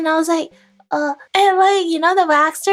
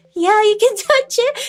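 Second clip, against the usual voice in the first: put-on laughing while talking, higher; 4 semitones higher than usual. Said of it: "She was laughing so hard".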